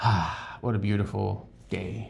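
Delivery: put-on relaxed voice. Acting out Jesus resting by the sea: imitating relaxed Jesus.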